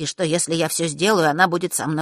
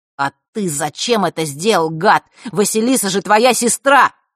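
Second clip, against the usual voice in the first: furious, enraged, louder and slower; 3 semitones higher, 6 dB louder than usual. Nick confronts the man over what he did to Vasilisa, furious. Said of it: "Ник в ярости на предателя сестры".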